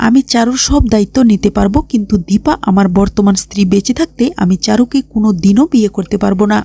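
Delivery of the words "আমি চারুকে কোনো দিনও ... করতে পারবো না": normal talking voice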